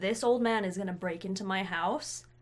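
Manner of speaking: normal talking voice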